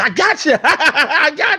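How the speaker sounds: put-on laughing taunt. Recalling an opponent who always beat him, imitating that opponent's laughing taunt. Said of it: "he will always laugh like".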